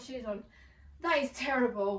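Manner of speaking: breathless, winded, short of air. Talking through an outfit after putting shoes on, out of breath. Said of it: "i'm so out of breath".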